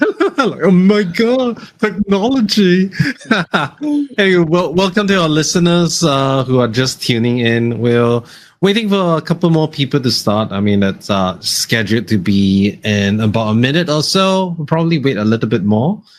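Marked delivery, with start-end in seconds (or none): 0.6-2.9 high mock old-person voice. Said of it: "you just sound really old".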